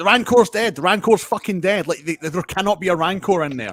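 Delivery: insistent, high, loud screamed outburst. Retelling a reaction to a tv scene: imitating own screaming. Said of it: "screaming at my T V".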